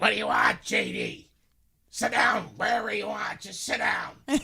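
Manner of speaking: very high, brusque, rough-edged, creaky voice. Retelling how a restaurant lady greeted him: imitating Kathy's brusque greeting. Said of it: "this is how she would greet me".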